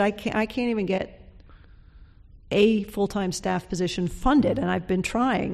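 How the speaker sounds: ordinary delivery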